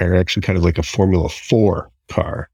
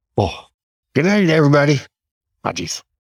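put-on voice pitched much higher; 8 semitones higher than usual. Finishing up, the speaker invites everyone to do a goodnight impression; Andrew Spencer goodnight impression. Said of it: "do your best Andrew Spencer saying goodnight impression".

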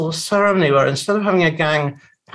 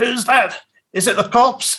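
put-on gangster voice, pitched-up booming shout; 7 semitones higher than usual. Retelling a boy opening the door, imitating his father booming in the background. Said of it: "his father's voice booming".

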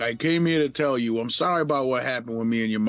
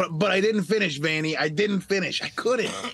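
put-on, high, screechy Boston accent; 6 semitones higher than usual.

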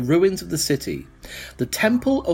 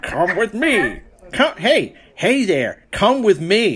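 attempted Canadian accent, much higher pitch; 4 semitones higher, 4 dB louder than usual. Voicing a character the players guess is from canada, attempted canadian accent. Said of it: "He's from Canada / America".

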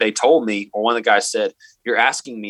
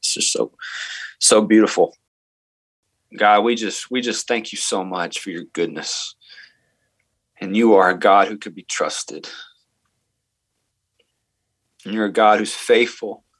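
getting emotional, moved, much slower pace. Praying aloud for listeners after being asked to, getting emotional. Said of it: "I'm getting emotional kind of thinking about that".

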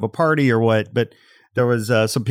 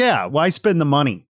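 snotty bad-attitude tone, higher pitch; 4 semitones higher than usual. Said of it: "real bad attitude".

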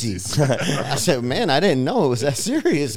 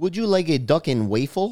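put-on Brazilian accent in English, laid on thick; 4 semitones higher than usual. Recalling a friend's line in his Brazilian accent: imitating Tony's Brazilian accent. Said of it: "Tony had the best Brazilian accent".

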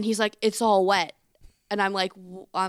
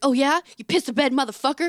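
mock arguing tone, higher and louder; 6 semitones higher, 5 dB louder than usual. Retelling a line from a comedy skit's girlfriend: imitating an arguing girlfriend. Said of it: "arguing with his girlfriend".

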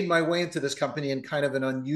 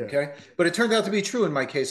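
ordinary delivery

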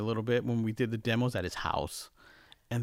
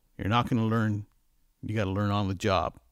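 put-on big baritone voice; 2 semitones lower than usual. Retelling advice from a man asked about getting into the business, imitating a big baritone voice. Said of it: "with this big baritone voice".

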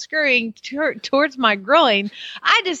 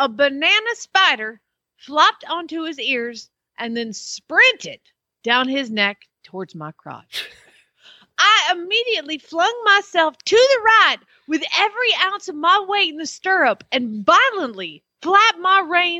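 imitated Southern accent; 3 semitones higher than usual. Reading a true story aloud as it comes, in a Southern accent. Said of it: "a Southern accent".

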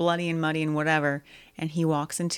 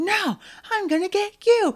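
put-on, very high, shrill, berserk rage yell; 6 dB louder than usual. Describing a movie scene where he fights the clown, acting out a rage outburst. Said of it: "he's just like going ballistic on it".

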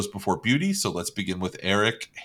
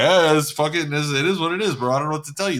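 loud, dismissive put-on Caribbean Puerto Rican accent; 6 semitones higher, 5 dB louder than usual. Imitating an uncle who owes money and brushes it off: put-on Puerto Rican accent. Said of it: "a Cuban, Caribbean, like, Puerto Rican kind of".

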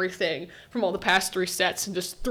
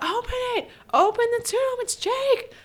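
play-acted very high, urgent, desperate shouting. Retelling watching a show, imitating own screaming at the TV. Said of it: "I was screaming at my T V".

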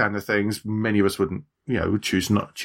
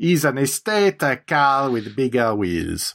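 put-on Italian accent, higher; 4 semitones higher than usual. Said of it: "That was perfectly reasonable Italian accent".

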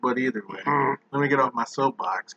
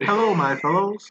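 high-pitched put-on talking alligator voice; 6 semitones higher than usual. Joking about how gators would talk: put-on gator voice. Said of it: "what do the gators sound like".

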